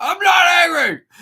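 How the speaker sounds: put-on, very loud, very high, shrill, furious yell. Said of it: "you're yelling a little bit loud".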